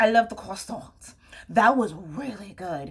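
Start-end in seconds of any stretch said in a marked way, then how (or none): 0.0-1.2 bad put-on French accent. Joking in a video that viewers think they sound French, in a bad French accent. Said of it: "you think that I sound like I'm French".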